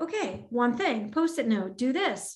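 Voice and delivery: put-on calm voice. Describing how using post-it notes helped, reenacting own calm voice. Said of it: "you can hear it in my voice, like this calmness".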